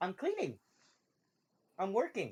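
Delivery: high, soft, sing-song voice floated up. Telling the others what Blanket says in their heads, in Blanket voice. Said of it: "That's kind of what Blanket sounds like".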